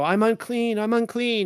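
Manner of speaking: play-acted high, slow, drawn-out, repeated scream. Retelling how Isaiah cried out before the throne: Isaiah screaming. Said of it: "Isaiah went up there and he's screaming".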